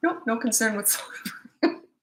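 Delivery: amused, giggling, laughing through the words. Answering a parent's question about toddler tantrums, laughing while talking. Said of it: "Sorry. I'm not laughing at you".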